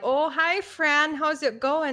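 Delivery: put-on American Midwest accent. Acting out the lady waving to her neighbor: put-on Midwest accent. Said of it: "Midwest accent I was using".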